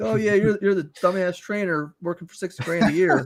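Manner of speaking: mock derisive laughing. Retelling how someone laughed in a trainer's face: imitating someone laughing mockingly. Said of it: "laughing about it in the guy's face".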